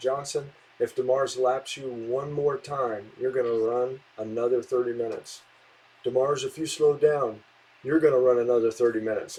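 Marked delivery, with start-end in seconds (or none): none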